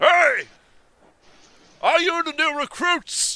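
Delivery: very high, very loud booming, bellowing shout. A man shouting across the courtyard to the new recruits: booming shout. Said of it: "his booming shouting coming across".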